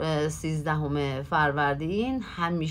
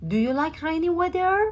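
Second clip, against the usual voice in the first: pitch rising up on weather; 12 semitones higher than usual. English lesson on question intonation going up: rising pitch on weather. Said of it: "بازم اینجا میره بالا".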